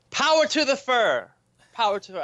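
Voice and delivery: mock shouting. Retelling shouting a slogan at a protest: retelling own scream. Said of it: "I keep screaming it".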